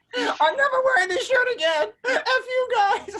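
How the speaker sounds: mock wail, high, loud, with laughter.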